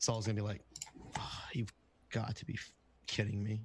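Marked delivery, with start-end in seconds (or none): 1.2-3.6 muttering under breath, as an aside. Voicing a character reacting to a long flight, muttering under his breath. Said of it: "under his breath".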